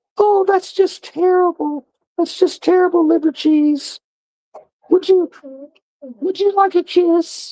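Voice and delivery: squeaky, very high-pitched puppet voice. Showing off some finds, the speaker talks in a puppet voice. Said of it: "started talking in my puppet voices".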